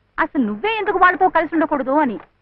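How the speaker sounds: plain reading voice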